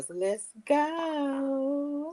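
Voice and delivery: put-on whispered voice. Mimicking how another speaker says a catchphrase: imitating someone's whisper voice. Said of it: "you try to say it in that whisper voice".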